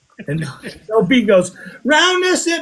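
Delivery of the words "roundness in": very high, hollered yell. Retelling a token find, the speaker acts out another person yelling. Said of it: "she's yelling at uh".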